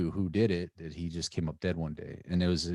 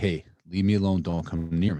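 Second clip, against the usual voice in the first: loud raised voice meant to carry; 6 dB louder than usual. Retelling warning someone off before a fight so witnesses hear, retelling saying it very loudly. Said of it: "so I'm saying very loudly".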